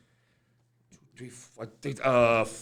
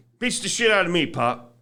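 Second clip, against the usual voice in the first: plain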